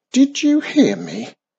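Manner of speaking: insistent, pressing, forceful, very high, loud voice. A witch repeats her question to a crow ignoring her, demanding more forcefully. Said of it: "demanded Wizardy Witch more forcefully".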